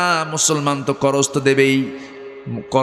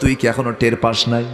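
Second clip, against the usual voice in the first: ordinary talk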